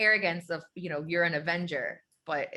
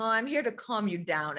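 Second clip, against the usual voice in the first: put-on patronizing, condescending, talking-down voice; 5 semitones higher than usual. Retelling how a character pats her, imitating a condescending tone. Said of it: "this dude is so condescending".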